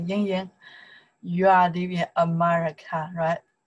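plain

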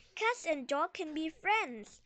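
plain

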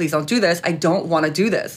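plain

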